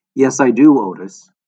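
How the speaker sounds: deadpan, flat, unmoved, slow delivery. Answering a man who shouted that she's crazy, she replies, flat. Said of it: "Crow said flatly".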